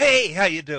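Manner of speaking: blaring, very loud, high voice. Greeting the others after being introduced: loud greeting. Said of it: "That was as loud as".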